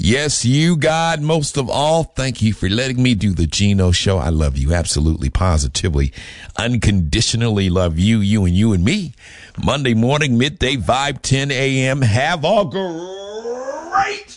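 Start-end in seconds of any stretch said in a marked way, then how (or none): 12.0-14.4 the word "great" stretched out, pitched way up. Host signs off his morning show, in his Tony the Tiger voice. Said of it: "in my Tony the Tiger voice".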